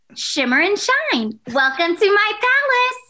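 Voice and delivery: very high, swooping animated cartoon character voice. Voice actor shows the animation voice people don't believe is theirs: cartoon character voice. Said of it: "Good impression".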